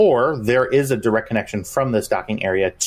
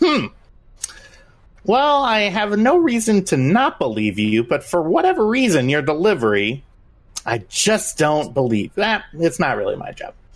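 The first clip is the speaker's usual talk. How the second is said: doubtful mechanical robot voice, pitched high; 7 semitones higher than usual. Voicing a doubting droid who squints at a player: skeptical droid character voice. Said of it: "his mechanical eyes squint at you and goes".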